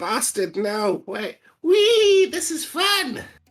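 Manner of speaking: very high, very loud, swooping shriek. Voicing a flying character in the game: character screaming while flying. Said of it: "he'll be screaming".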